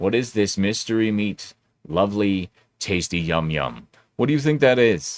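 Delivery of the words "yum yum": mocking, insincere enjoyment. Asking what the mystery meat in the omelet is, sarcastic yum yum. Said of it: "please note the sarcasm in my voice when I say yum yum".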